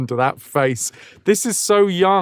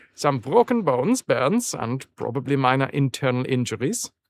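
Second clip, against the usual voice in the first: put-on German accent on English; 4 dB quieter than usual. Reading game dialogue aloud, the player reads the line in a german accent. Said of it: "I'm doing a German accent".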